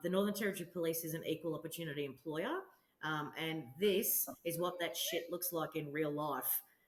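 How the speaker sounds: ordinary talk, nothing marked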